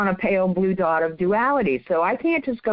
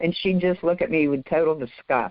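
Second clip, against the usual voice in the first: plain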